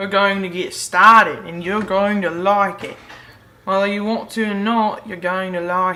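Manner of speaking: clumsy, bad put-on Australian accent. Host opening the show by greeting viewers, in a bad Australian accent. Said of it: "I don't care how bad my Australian accent is".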